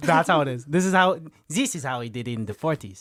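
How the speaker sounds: clumsy, terrible, put-on German accent. Describing a man showing his daughter how it's done, terrible German accent. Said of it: "Terrible German accent".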